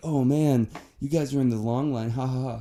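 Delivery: acted, smug, gloating jeer with a ha-ha-ha. Retelling what a woman in the security line said: imitating someone smug. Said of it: "And she's all being, like, smug and shit".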